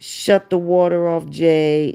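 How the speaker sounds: mean, sinister, low, evil voice. Retelling A shoving Jay, imitating A's evil voice. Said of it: "said in real evil voice".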